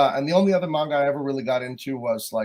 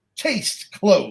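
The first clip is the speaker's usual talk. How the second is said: dramatic, pitched-up delivery, full of gusto and attitude; 5 semitones higher than usual. Showing how the phrase should be said, with attitude. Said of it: "You have to say it with attitude".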